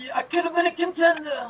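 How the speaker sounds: very high-pitched movie-star voice. Quoting a famous film line after the others name the actor: Marlon Brando impression. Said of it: "is this your other impression?".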